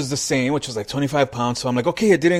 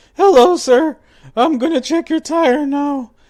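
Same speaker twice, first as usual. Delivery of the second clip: put-on squeaky, very high teen voice; 12 semitones higher, 6 dB louder than usual. Speaker imitates the young man checking his tire; Simpsons squeaky-voiced teen. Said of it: "reminded me of the squeaky voiced teen".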